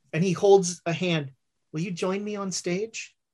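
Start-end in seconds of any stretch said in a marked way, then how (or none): 1.7-3.1 low-key, quiet, hushed, understated delivery. Game master voicing a character speaking to a player, in a quiet voice. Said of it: "in the same quiet voice".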